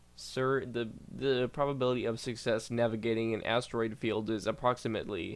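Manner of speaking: ordinary talk, nothing marked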